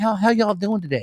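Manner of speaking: put-on Southern accent. Giving a shout-out to the girls from Georgia, Southern accent. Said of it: "those girls had the southern accent".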